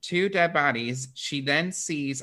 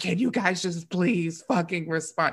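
acted-out mock freak-out, pitched higher; 5 semitones higher than usual. Retelling a story: the character calls to friends who don't respond, flipping out. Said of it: "She's flipping the fuck out".

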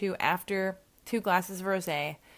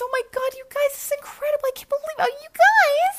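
put-on very high, loud, squeaky little-girl voice, squealing and gushing; 10 dB louder than usual. Retelling how they talked to their friends, speaker uses a Minnie Mouse voice. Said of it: "I was talking like this".

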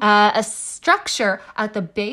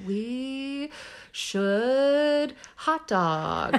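very slow, fumbling, put-on drunk words; 3 semitones higher, 6 dB quieter than usual. Imitating oneself drunk, trying to form a sentence: imitating being drunk. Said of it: "The M T A is like me when I'm drunk".

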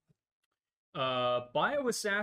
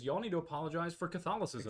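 ordinary talk, nothing marked

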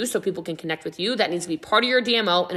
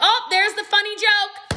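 put-on amused voice, very high-pitched and slow. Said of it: "There's like".

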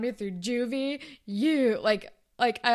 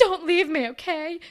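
mock dramatic tone, higher; 6 semitones higher, 4 dB louder than usual. Retelling a scene where a character begs another not to leave: imitating a dramatic plea. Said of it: "So dramatic".

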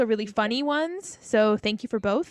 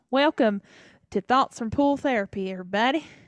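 put-on Southern accent.

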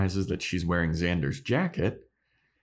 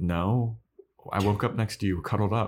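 ordinary talk, nothing marked

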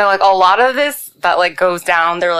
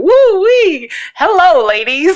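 very high, loud, swooping sing-song hoot; 12 semitones higher, 5 dB louder than usual. Telling a joke about a blind man passing the fish market: acting out the blind man. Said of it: "The blind man walked past the fish market and went".

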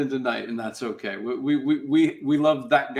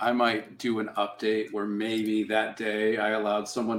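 usual speaking voice

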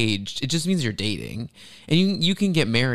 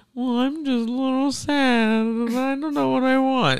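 put-on very high, slow, mopey sad-girl voice; 13 semitones higher than usual. Speaker imitating a woman who plays the sad-girl card, mock-sad girl voice. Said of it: "she plays this like sad girl".

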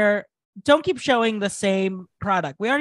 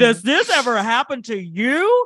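slow, pitched infomercial announcer voice; 3 dB louder than usual. Describing an ideal product ad, doing the infomercial voice. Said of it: "And you have to do the voice".

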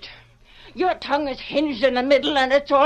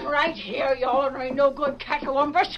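usual speaking voice

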